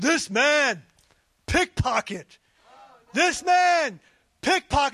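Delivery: loud, big, booming voice. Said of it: "booming voice, louder than Dave's".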